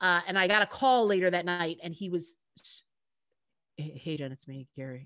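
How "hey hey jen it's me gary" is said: put-on serious tone, lower and quieter. Retelling a late-night phone call from the co-nanny: imitating Gary's serious tone. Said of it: "such a serious tone".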